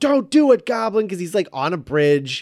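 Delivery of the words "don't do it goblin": full-on high, loud shout, really belting. Recalling a movie line yelled from a bridge: imitating Spider-Man shouting. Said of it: "he was shouting it really loud".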